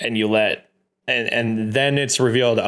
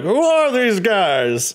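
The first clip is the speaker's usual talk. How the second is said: bad put-on voice, very high, swooping, drawn out; 10 semitones higher, 3 dB louder than usual. Retelling how J R reacted, in a J R impression. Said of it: "Added to the counter of bad J R impressions".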